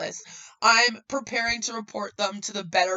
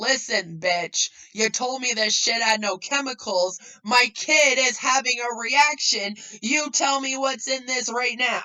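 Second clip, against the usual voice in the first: mock freaking out, full-on furious screaming rant; 4 semitones higher, 3 dB louder than usual. Acting out confronting an upline about chemicals: imitating someone screaming. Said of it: "I would probably be screaming that at her".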